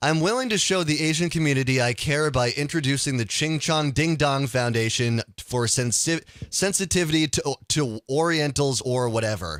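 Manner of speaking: usual speaking voice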